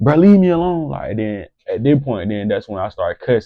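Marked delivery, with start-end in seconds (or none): 0.0-0.9 shrill, loud, mock screaming outburst. Retelling an argument with an older man: retelling screaming at someone. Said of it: "I'm screaming at him".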